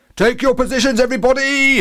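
very high, booming voice. Reading a character ordering everybody to take their positions, booming. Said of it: "boomed Horace".

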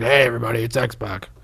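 gruff, low, growly voice. Showing how X-Pac sounds these days: gruff X-Pac voice. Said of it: "He's got a really gruff voice now".

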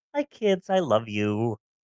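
low, soft, euphoric, blissfully contented voice. Describing how bliss pills make the speaker feel, acting blissed-out happy-go-lucky high. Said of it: "a nice euphoric feeling where I'm really happy-go-lucky".

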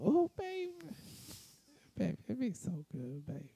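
very soft, very high, sing-song, hushed grandma voice. Answering as Grandma when asked how it was: grandma voice. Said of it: "That's the voice I think I really love when you do".

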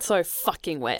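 mock forceful, aggressively enthusiastic delivery. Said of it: "the enthusiasm you said that with".

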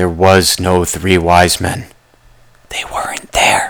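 whispering. Podcast host talking to listeners, whispering. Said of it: "I'm whispering again".

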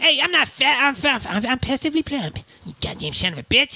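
put-on bratty cartoon kid voice. Answering someone who calls him fat, in an Eric Cartman voice. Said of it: "You could be trying to pick up Eric Cartman".

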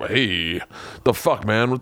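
voice of a wounded buffalo. Retelling a hunt, voicing the shot buffalo: voicing a wounded buffalo. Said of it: "the buffalo kinda is like".

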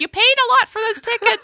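very high-pitched motherly voice. Retelling a mother's call about concert tickets: imitating mom's voice. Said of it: "And that's my mom's voice".

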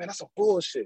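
whispered, pitched high. Retelling a remark whispered to Akili during a city meeting: retelling own whisper. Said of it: "I'm whispering to Akili".

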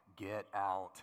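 spooky, eerie, creepy voice. Describing an inner warning in a bad neighborhood: creepy voice. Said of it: "a creepy voice that's like".

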